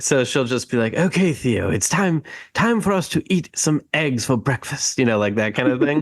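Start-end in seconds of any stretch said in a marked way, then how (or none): 0.9-5.0 pitched-up nature-film narrator voice. Retelling how the wife tells Theo it's breakfast time, David Attenborough voice. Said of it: "doing a David Attenborough voice".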